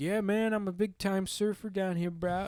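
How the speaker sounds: high surfer-dude bro voice. Retelling a stranger's talk at an airport bar: imitating a surfer dude. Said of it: "using the whole, like, surfer lingo".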